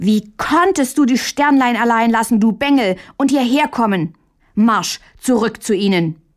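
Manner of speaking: shouting, hard and chiding. Reading a story, a child out of breath from playing confronts a brother: shouting. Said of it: "schrie Mündlein es an".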